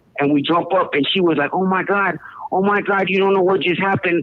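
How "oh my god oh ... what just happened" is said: put-on hysterical crying voice. A neighbor runs crying into the apartment after an incident, imitating Michelle's hysterical crying. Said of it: "like crying, like hysterical".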